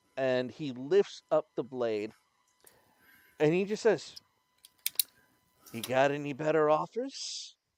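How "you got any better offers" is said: smug, smirking demon voice, louder. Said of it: "it just kind of smirks at you".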